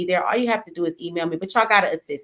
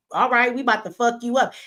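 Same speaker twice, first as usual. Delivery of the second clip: mock serious, firm, pitched-up threatening tone; 5 semitones higher than usual. Retelling what was said on TV: imitating a firm, serious threat. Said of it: "with a strong face".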